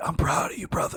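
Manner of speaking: put-on old smoker voice. Quoting one of the grossest friends, in an eighty-year-old smoker voice. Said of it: "they're fucking eighty year old smokers".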